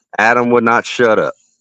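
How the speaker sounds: plain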